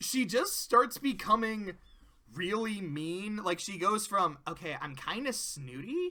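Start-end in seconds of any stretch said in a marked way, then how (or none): 4.5-6.1 put-on, swooping, sing-song Valley Girl accent. Speaker showing how her character starts out: Valley Girl voice. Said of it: "that was the Valley Girl".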